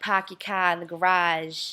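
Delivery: imitated, put-on Boston accent. Talking about finding accents funny, quoting what you hear in Boston, imitating a Boston accent. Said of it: "you go up to Boston and you hear like".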